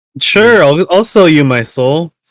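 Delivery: sounding happy. Answering in character when asked by the immortal: sounding happy. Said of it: "Why do you sound happy about that".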